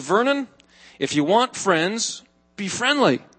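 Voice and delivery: ordinary talk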